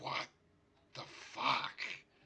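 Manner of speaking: raspy, rough, creaky reptile creature voice. Voicing a lizard folk reacting to the gnome: voicing a lizard folk. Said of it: "the lizard folk is just".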